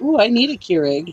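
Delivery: eager, delighted, excited gush, high and loud. Retelling what dad said about the keurig: imitating dad sounding excited. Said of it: "He was all excited".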